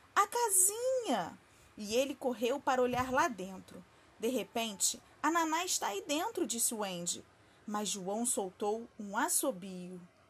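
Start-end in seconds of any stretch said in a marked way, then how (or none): 0.2-1.4 calling out in a high, sudden exclamation. He spots the little house and runs to look inside: exclaiming. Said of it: "exclamou João".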